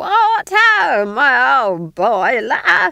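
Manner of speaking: high, loud screeching. Nanny Ogg greets Granny by the fire, screeching above the din. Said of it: "she screeched above the din".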